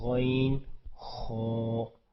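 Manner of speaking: thick, heavy, thickened pronunciation. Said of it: "اس کو تھوڑا موٹا بھی کرتے ہیں".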